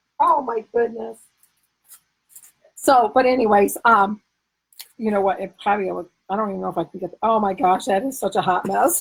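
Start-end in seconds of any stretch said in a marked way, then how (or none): 7.2-9.0 talking through laughter, lower. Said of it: "I make myself laugh tonight".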